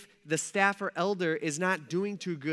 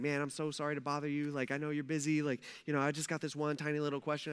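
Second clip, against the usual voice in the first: put-on timid politeness, lower and quieter; 3 semitones lower, 8 dB quieter than usual. Imitating church members asking staff a question: imitating an overly polite person. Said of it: "so polite on everything".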